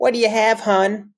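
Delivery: put-on high, New York waitress accent. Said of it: "like, what, a New York accent?".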